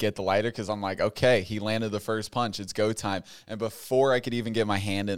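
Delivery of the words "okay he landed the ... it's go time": usual speaking voice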